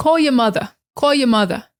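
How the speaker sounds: New York-sounding speech. Video host demonstrating new york phrases at the end: new york accent. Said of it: "So in New York, they they're gonna say like".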